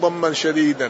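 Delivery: ordinary delivery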